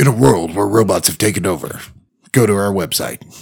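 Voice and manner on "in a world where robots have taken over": movie trailer narrator voice. Asked by a co-host to read it in a voice, movie trailer narrator voice. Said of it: "Can we do it in a voice".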